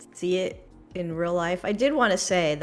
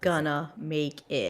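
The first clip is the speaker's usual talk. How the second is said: robotic voice, lower; 3 semitones lower, 3 dB quieter than usual. Explaining what a sponsor's feature name stands for, in a robotic voice. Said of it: "In my robotic voice".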